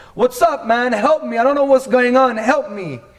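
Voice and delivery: high, loud, casual calling out like to a buddy.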